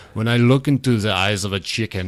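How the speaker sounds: put-on German accent. Quoting a documentary director's chicken remark in a German accent. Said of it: "his German accent when he's saying".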